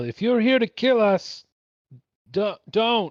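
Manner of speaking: very slow, high, drawn-out carrying yell. A player's character points at a stranger and calls out: yelling. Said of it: "Point at him and I yell".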